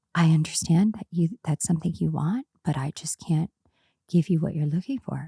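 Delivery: mock-gentle, soft and low. Retelling how a man answered when asked for the truth, imitating a gentle, low voice. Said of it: "he's talking like really gentle and low".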